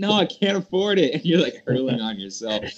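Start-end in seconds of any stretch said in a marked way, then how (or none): 0.0-1.1 mock, high-pitched, very drunk young man voice. Acting out a drunk college kid answering a helpful RA: imitating a drunk college kid. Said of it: "the kid ... too drunk".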